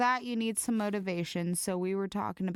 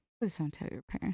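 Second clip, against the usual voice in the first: hushed, quiet, flustered and embarrassed tone; 2 semitones lower, 3 dB quieter than usual. Retelling an embarrassed friend's follow-up line: imitating a quieter voice. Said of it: "in a more quiet voice".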